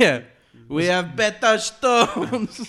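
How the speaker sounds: slow, put-on Italian accent. Joking about stones in a mock foreign accent: put-on accent sounding italian. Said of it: "Why has it gone Italian now?".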